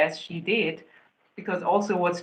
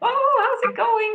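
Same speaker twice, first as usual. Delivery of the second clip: put-on very high, loud, cheerful baby talk; 4 dB louder than usual. Speaker recalls greeting everyone so the dog sees no threat, retelling loud, cheerful baby talk. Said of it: "baby talking my dog in a loud, cheerful voice".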